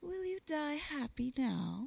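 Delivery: gentle, soft, high cooing. A woman addresses a man who is still to die; soft cooing. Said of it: "She cooed softly".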